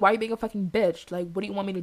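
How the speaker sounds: put-on pissed-off retort. Speaker retells what she snapped back about calling him: retelling a pissed-off retort. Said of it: "I'm pissed off".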